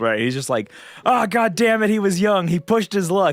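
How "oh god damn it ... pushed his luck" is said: put-on frantic, freaked-out yelling, frenzied and pitched up. Recapping a game scene, speaker acts out a character freaking out, imitating Luzzu screaming super fast. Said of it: "he's like screaming super fast".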